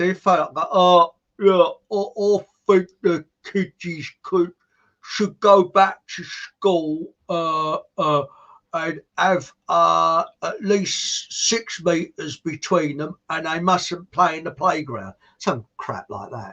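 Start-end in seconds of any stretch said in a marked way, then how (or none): 0.7-15.1 slow, thick, halting, dopey put-on dim-witted voice. Retelling getting on air for a laugh: put-on thick voice. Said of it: "put on a thick voice".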